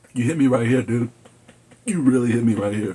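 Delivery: fighting back tears, on the verge of crying. Reviewing a film that made the speaker cry, trying not to cry. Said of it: "I'm trying not to cry now".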